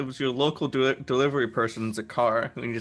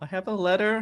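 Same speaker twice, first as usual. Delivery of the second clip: meek, high, small, timid little voice; 8 semitones higher than usual. Retelling a scene as Lena yells at Ro and Ferris, put-on meek Everett voice. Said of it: "a really meek Everett voice being like".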